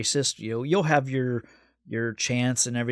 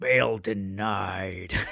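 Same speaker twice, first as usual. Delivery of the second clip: dark, sinister, low gravelly judge voice, drawn out; 4 semitones lower than usual. Retelling the judge denying bail in court: imitating gravelly menacing judge voice. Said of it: "the gravelly menace in the judge's voice".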